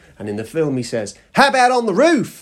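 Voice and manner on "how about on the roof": put-on Australian accent, pitched high and loud. Retelling a film scene, quoting a character's line in an Australian accent. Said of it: "In an Australian accent for some reason".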